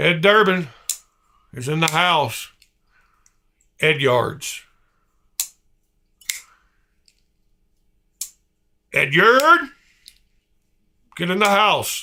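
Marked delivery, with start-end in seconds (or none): 3.8-12.0 swooping, squawking like a parrot. Calling out someone's name, screaming like a parrot. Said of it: "makes me want to scream it like a parrot would".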